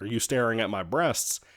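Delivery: normal talking voice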